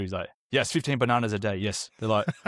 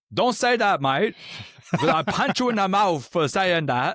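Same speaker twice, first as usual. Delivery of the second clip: put-on thick Australian accent, laid on heavy, pitched up; 8 semitones higher than usual. Retelling a comedian's video that rips off Bob Katter: thick-accented Bob Katter impression. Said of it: "he was ripping off that Bob Catter".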